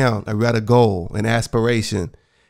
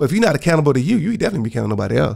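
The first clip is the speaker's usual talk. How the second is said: rushed, rattled-off, hurried words; 4 semitones higher than usual. Speaker giving advice about being accountable to yourself, speaking too fast. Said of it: "Said that too fast".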